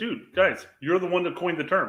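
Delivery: ordinary talk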